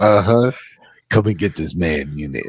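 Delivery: shady, creepy man voice. Talking about internet tracking cookies, voicing the tracking in a creepy guy voice. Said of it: "That's my voice for the internet tracking".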